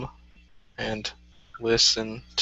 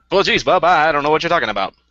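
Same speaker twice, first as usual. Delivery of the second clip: put-on high, loud, fast forties Mid-Atlantic film accent. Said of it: "Yeah, just like that".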